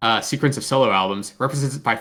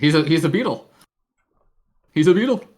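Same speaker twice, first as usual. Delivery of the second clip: bad, weak, unconvincing put-on Liverpool accent; 4 semitones higher than usual. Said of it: "you keep working on that accent".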